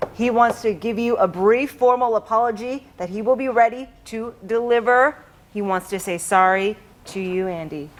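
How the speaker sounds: deep, put-on TV news-anchor voice. Reading a prepared apology announcement when asked: fake news anchor voice. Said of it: "real fake anchor voice".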